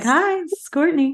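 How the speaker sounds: high, work phone voice. Speaker shows how she answers when she knows someone's calling, in a work phone-answering voice. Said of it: "sounded like you answered your work phone".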